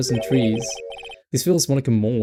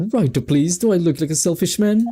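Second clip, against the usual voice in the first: overjoyed, beaming, really happy, cheerful voice; 4 semitones higher than usual. Voicing a guy character, really happy voice. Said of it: "I gave like this guy like a really happy voice".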